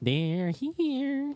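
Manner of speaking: eerie, creepy put-on voice, very high, stretched. Impersonating a character's iconic line, put-on creepy voice. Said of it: "That was yeah, my impersonation".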